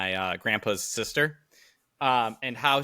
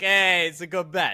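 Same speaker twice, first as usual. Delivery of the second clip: high Italian mobster voice; 7 semitones higher, 4 dB louder than usual. Joking that a gambling tip sounds stereotypical, doing a crazy mafia Italian guy impression. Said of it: "Like just some crazy mafia Italian guy".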